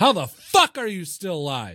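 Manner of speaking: mock sudden outburst, high, swooping shout. Speaker re-enacting what he shouted at her during the game: retelling a shout. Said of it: "I shout it. I say it like that".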